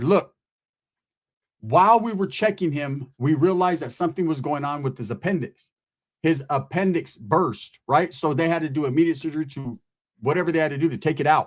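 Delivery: ordinary talk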